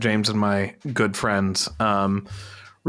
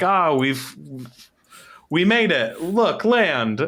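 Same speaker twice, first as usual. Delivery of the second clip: generic put-on Australian accent, pitched up; 6 semitones higher than usual. Imagining the first humans arriving in Australia, generic Australian accent. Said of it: "generic Australian accent of just like".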